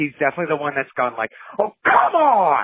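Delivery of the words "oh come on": put-on high, loud, angry old man yell. Acting out a basketball player complaining: Bob Odenkirk old guy yelling voice. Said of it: "old guy yelling voice, uh, that Odenkirk does".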